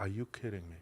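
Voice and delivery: imitated crying. Retelling own reaction on hearing the son's news: imitating own past crying. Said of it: "I start crying".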